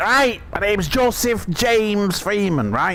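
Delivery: put-on heavy drunk Liverpool accent. Retelling an old man introducing himself on a train, in Joseph James Freeman's thick Scouse accent. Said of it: "He had a thick Scouse accent".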